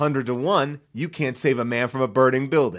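ordinary delivery

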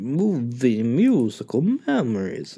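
swooping cartoon monster mascot announcer voice. Reading out a list title aloud in a Count Chocula voice. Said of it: "I said it like Count Chocula".

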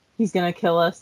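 plain

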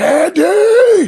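very high, loud frantic yell. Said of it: "he's like, he's like".

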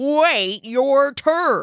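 stubborn goat voice grunting the words. Narrator reads the left goat's line to the right goat, grunting goat voice. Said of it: "grunted the left goat".

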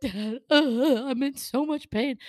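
mock tearful, slow crying voice. Retelling calling dad in pain after lab: retelling crying on the phone. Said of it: "crying on the phone".

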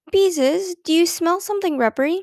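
anxious, worried, nervous tone. Mother comes in from the bedroom and asks Beezus something: anxious question. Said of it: "she asked anxiously".

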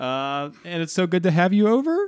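rising tune lifting the end of "over". Showing how a statement can sound like a question: rising question tune on over. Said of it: "it sounds like you're asking a question at the end of a statement".

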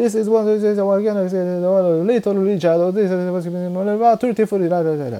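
very high, fast, rattled-off rhythmic DJ patter. Imitating a radio DJ introducing records: imitating a DJ's fast rhythmic patter. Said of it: "もうリズムで喋っていくんですよ".

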